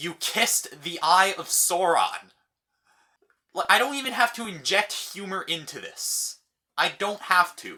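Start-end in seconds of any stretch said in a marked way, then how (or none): 0.0-2.3 put-on angriest voice, furious and utterly serious. Recounting what he told the speaker, retelling it in a most angry voice. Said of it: "in the most angry voice".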